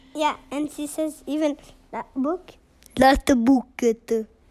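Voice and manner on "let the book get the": put-on shaky, hesitant English with an Italian accent. Imitating how the English teacher speaks English: imitating Silvia's Italian-accented English. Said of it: "Sylvia's accent in English is not great".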